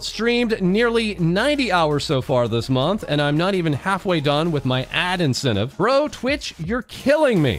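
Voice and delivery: ordinary delivery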